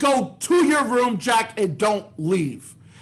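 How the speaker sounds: stern, angry, scolding tone. Telling a story, as mommy sending Jack to her room: acting as angry mommy. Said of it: "mommy was so mad at Jack".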